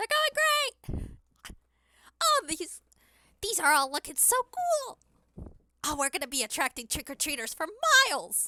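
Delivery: very high, sing-song cartoon squeak. Voicing a woman leaning back on her new cane to admire window decorations; Minnie Mouse voice. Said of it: "when I'm doing this Minnie Mouse voice".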